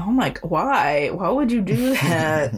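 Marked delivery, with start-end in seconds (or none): none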